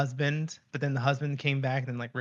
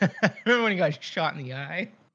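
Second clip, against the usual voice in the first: speech broken by giggles and laughter; 3 semitones higher than usual. Recalling a show character getting shot in the eye, laughing while talking. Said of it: "Why are you laughing about that?".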